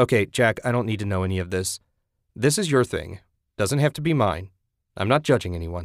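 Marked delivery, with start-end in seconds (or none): none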